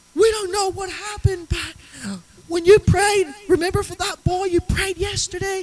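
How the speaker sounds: very high, shrill, loud screaming. Retelling a pastor's phone call the next day; imitating someone screaming. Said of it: "literally screaming like".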